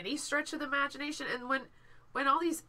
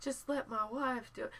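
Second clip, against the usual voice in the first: put-on soft-spoken politician voice, quieter; 6 dB quieter than usual. Imitating Ben Carson for the others: Ben Carson impression. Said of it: "Your Ben Carson impression was, was spot on".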